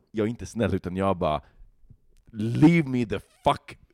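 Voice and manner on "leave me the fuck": mock very aggressive, high, dragged out very slow. Recounting snapping back at a guy who urged them to drop the phone: retelling an aggressive outburst. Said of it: "blir jätteaggressiv".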